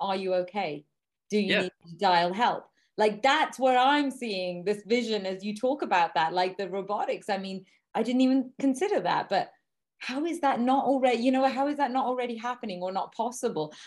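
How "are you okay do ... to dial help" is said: put-on voice-assistant voice. Imagining a smartwatch checking on its wearer, in a Siri-type voice. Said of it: "you've got like a Siri type voice going".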